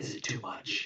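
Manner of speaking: hushed, breathy near-whisper. Voicing a character asking the other player if it's too much: lowered voice. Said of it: "He lowers his voice".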